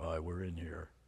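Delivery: very quiet, very low, hushed, throaty, guttural demon voice. Describing how a voice changes when a person is possessed: weird guttural voice. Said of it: "their voice changes and gets really weird and guttural".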